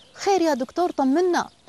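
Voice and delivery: anxious, frightened, high-pitched voice. A father asks the doctor who just examined his son: fearful question. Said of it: "سأله أبو هشام بخوف".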